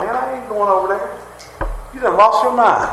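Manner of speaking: disbelieving, high voice. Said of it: "because we're like".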